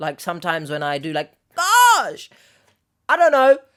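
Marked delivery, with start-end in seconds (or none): 1.6-3.6 voice leaping very high, loud upward inflection. Answering a comment about their voice, showing a high-pitched inflection. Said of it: "a high, what's it called? ... Inflection?".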